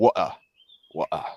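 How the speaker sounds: put-on London accent. Speaker shows how a word is said in London, in a London accent. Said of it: "in London it's like".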